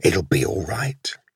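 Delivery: ordinary delivery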